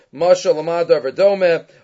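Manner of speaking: ordinary talk, nothing marked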